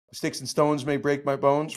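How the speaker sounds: ordinary delivery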